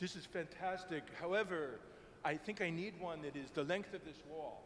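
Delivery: deliberately bad, laid-on fake Italian accent. Retelling what a man said on seeing a painting in the studio: bad Italian accent. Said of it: "I'll do a bad Italian accent".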